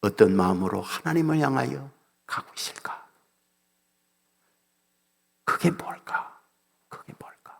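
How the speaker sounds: soft, hushed, reflective whisper.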